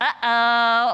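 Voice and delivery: loud, mocking uh-oh, drawn out, sarcastic. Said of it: "This cannot be said in sarcasm".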